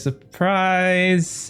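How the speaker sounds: shy, timid tone. Voicing a character greeting the player with a hug: sheepish and timid. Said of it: "very sheepish smile on".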